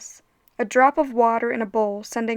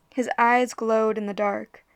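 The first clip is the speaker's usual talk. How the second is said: ordinary delivery, nothing marked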